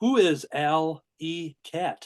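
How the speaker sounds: slow, deliberate, each word carefully spaced. On the show, a host reads out a past guest's question slowly. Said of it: "I'll say this slow".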